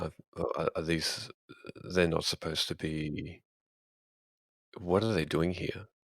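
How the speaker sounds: voice brought down, halting. Asking another character in the scene about nearby zombies: lowered voice. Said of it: "I'll just lower my voice and say".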